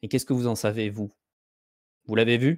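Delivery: chilly, distant, cold and icy voice. In a role-play, answering the other speaker's claim, cold voice. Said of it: "prendre euh, une voix froide".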